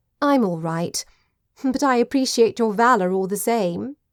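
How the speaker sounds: plain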